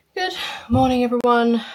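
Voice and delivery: breathless, high-pitched voice. Greeting everyone right after getting back from going out, out of breath. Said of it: "Sorry if I sound out of breath".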